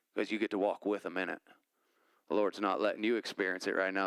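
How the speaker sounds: put-on Louisiana accent, low-pitched and quick. Retelling a conversation, quoting a man from louisiana in his louisiana accent. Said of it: "so that's why I use his voice".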